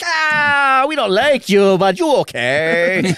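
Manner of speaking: slow put-on French accent, long drawn-out "ah". Voicing the birds of the game in a French accent. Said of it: "that was his French accent".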